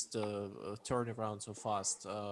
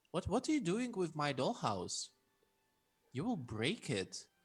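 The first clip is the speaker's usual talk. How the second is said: put-on childlike, high-pitched, sing-song little girl voice; 6 semitones higher than usual. Voicing a girl on the bed who questions the player: girl character voice. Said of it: "she's looking at you and she's like".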